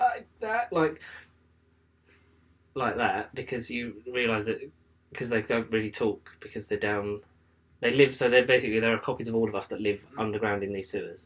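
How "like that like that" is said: croaky voice, drawn out slow and pitched up. Describing the film's underground copies, the speaker imitates Red's croaky voice. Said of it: "sort of in like a croaky voice".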